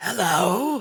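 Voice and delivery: rasped-out high voice. Voicing a mummy-like creature greeting a player: rasping voice. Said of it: "it looks at Nettle and rasps out".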